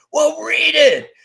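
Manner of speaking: shrill, loud scream, very high pitch. Recalling confronting someone who hadn't read it yet, retelling a scream. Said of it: "And I screamed".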